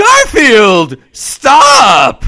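very loud, high, swinging, swooping shout. Acting out John Arbuckle chasing Garfield: John Arbuckle shouting. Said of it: "John Arbuckle running up behind him, shouting".

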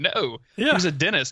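spoken through laughter. Retelling a character's reply from the book: imitating laughing while talking. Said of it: "Susanna starts laughing like".

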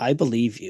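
thick, utter sarcasm, plainly disbelieving. Retelling what is said to coworkers who give excuses: imitating utterly sarcastic tone. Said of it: "so utterly sarcastic".

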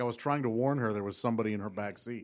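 normal talking voice

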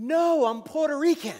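stretched-out shouting voice. Retelling an answer to a stranger on the street: retelling own scream back. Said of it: "so I screamed back".

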